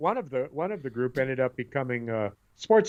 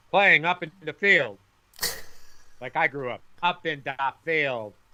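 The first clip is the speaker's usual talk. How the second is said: put-on Polish accent; 3 semitones higher than usual. The speaker acts out their mother's words: Polish accent. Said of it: "that was a Polish accent".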